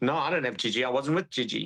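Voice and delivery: ordinary talk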